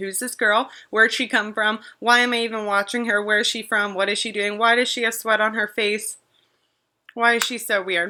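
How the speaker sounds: normal talking voice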